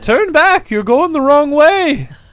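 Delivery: very high, put-on old gold miner voice. Getting into a character voice to warn the others: old gold miner voice. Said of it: "I had to say that to get into my character voice".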